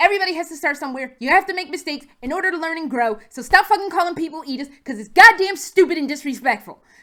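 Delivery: furious, loud, fast angry yelling, words tumbling out. Speaker on their soapbox, venting to the audience; yelling angrily. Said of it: "I'm sorry for yelling".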